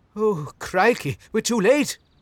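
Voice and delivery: very high, very loud, frightened, shrill outburst. Narrator reads a man reacting as a clawed creature steps onto the porch: blurted out fearfully. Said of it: "blurted out Dunning fearfully".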